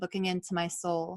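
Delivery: ordinary delivery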